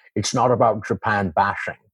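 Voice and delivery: put-on Scottish accent, savouring and rolling out bashing. Showing how an impression was learned from a commercial: Sean Connery impression. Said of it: "for Sean Connery".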